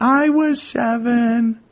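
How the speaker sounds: put-on very high little kid's voice, drawn-out "seven". Retelling a voice answering an investigator's question about age, in a little kid's voice. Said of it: "sounds like a little kid's voice going".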